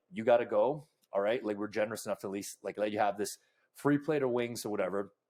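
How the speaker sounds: ordinary delivery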